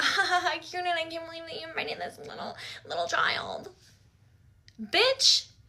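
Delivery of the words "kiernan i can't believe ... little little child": mock mocking laughter, higher and quieter. Retelling how the others in the car laughed about her: imitating someone laughing while mocking. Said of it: "laughing about it".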